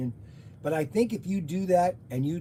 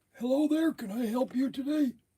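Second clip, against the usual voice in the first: put-on old man voice, pitched up; 8 semitones higher than usual. Answering a spam call in character as an old man, old man voice. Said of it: "I'm going to be my my old man".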